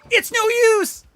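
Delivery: really loud, very high shout. Showing how to get into Silver's voice: loud Silver voice. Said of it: "saying "It's no use," like, really loudly".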